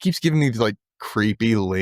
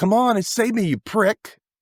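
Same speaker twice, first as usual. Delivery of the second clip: put-on very high, goading, taunting shout; 11 semitones higher than usual. Retelling a scene where she calls out to the chasing guy: imitating someone yelling. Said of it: "yelling out".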